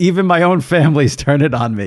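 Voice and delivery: normal talking voice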